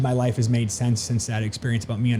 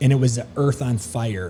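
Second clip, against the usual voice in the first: ordinary talk, nothing marked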